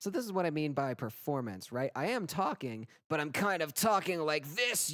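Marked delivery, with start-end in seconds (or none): 3.1-4.9 gritty compressed voice, much higher. Demonstrating his recording performance, talking with more grit. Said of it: "I have a little bit more grit".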